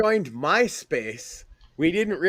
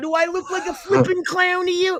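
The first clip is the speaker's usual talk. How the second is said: put-on movie gangster voice, higher; 14 semitones higher, 4 dB louder than usual. Retelling a TV-edited Goodfellas scene as Joe Pesci: Joe Pesci impression. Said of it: "Joe Pesci going".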